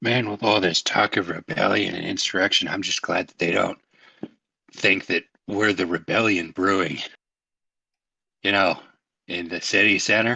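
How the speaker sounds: put-on loud, drunken stage whisper. A narrator voicing Musley as he scooches back over, drunk loud stage whisper. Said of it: "in a loud, but like he's supposed to be whispering".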